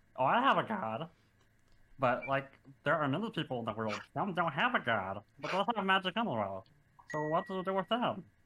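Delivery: small kobold creature character voice. A tabletop player voices Hedwig, a small kobold, in conversation; Hedwig small kobold voice. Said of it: "So Hedwig is a small 2'8" kobold".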